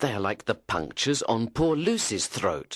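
ordinary talk

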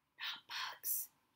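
very soft, hushed, barely audible whisper. A man on a boat, gazing at the water, answers his companion, whispering. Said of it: "he whispered".

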